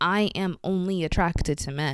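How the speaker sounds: ordinary delivery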